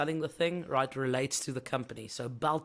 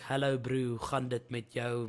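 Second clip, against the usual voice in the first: heavy put-on Afrikaans-English accent, slower; 3 semitones lower than usual. Demonstrating South African accents in a video, hectic English Afrikaans accent. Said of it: "proper English Afrikaans kind of thing".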